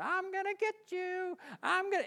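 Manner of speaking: put-on witch voice. Retelling a childhood nightmare about the Wicked Witch of the West: Wicked Witch of the West voice. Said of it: "she's going".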